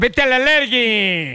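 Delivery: slowed sports announcer impression. Watching the game, the speaker says the phrase as Perro Bermúdez would: Perro Bermúdez impression. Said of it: "Si lo dijera el perro Bermúdez".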